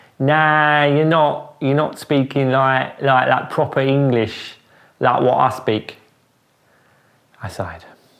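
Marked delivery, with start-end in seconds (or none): 0.2-6.0 put-on coarse, working-class accent. Retelling an argument with Mum about proper English: imitating Mum's common accent. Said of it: "describes herself proudly as being common as muck".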